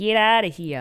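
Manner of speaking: put-on, attempted Boston accent. Wondering how a person in boston would say it, trying a boston accent. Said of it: "how would a, a person in Boston say get out".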